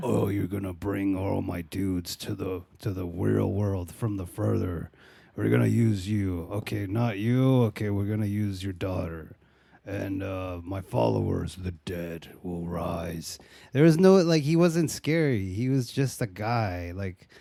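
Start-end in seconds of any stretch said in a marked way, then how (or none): 0.0-13.4 mock deep, sexy voice, pitched lower. Imitating the movie's cult villain for the other speaker: imitating a deep, sexy voice. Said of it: "he talked like this".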